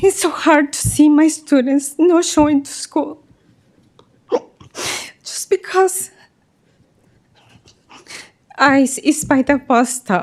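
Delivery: words pushed through tears. A teacher and Mexican American speaker addresses listeners, crying while speaking. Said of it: "I'm a crier".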